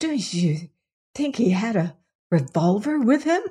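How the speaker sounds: speaking in hushed tones. Looking at her aunt and another woman, she asks in a hushed voice. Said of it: "she said in a hushed voice".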